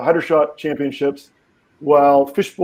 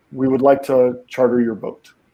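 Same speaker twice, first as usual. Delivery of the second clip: put-on thick Russian accent in English; 3 semitones lower than usual. Voicing a man in an expensive suit asking to charter a boat: thick foreign accent in English. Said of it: "in thickly accented English".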